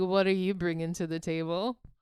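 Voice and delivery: grumbled stage-mutter aside. Retelling what a man says, imitating him muttering under his breath. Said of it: "under his breath, be like".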